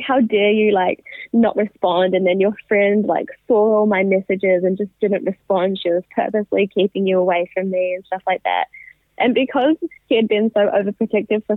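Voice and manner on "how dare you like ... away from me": ordinary talk, nothing marked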